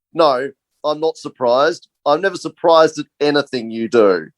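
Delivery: mock, bone-dry, driest possible deadpan delivery. Retelling a production assistant's reply to being called surprised: imitating Pete's dry delivery. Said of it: "he just says in the driest voice".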